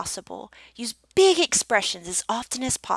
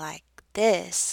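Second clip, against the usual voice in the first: very slow exaggerated speech, lower pitch; 4 semitones lower than usual. Coaching on speaking pace, showing what too slow sounds like: very slow. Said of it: "you don't want to go so slow".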